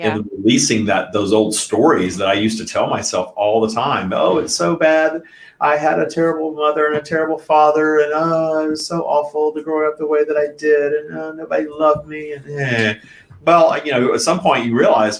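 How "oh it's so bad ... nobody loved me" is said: mock-whiny voice, higher pitched. Speaker retelling the old stories they used to tell themselves, put-on whiny voice. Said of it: "whiny voice".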